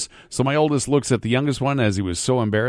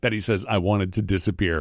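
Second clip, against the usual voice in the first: ordinary delivery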